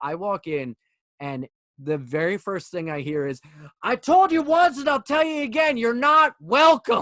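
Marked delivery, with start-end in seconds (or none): 3.8-7.0 very loud, shrill, high-pitched bawling-out. Retelling a man at a bar yelling at a friend: imitating someone yelling. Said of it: "he's yelling at her".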